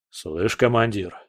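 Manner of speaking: plain reading voice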